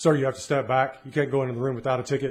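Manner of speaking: acted, fast, grumpy, rude, surly guard voice. Retelling how a guard stopped them peeking into a room, imitating a surly guard. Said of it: "the guard says in a surly voice".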